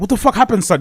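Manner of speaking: put-on alarmed, worried, concerned voice. Recalling bawling on the bed when his dad came in, imitating his concerned dad. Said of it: "He's so concerned".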